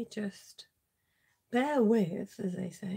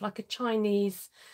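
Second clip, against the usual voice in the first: ordinary talk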